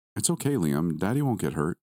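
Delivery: plain reading voice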